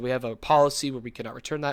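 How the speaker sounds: ordinary delivery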